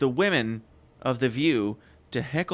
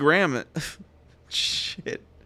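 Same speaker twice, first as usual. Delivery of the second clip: ordinary delivery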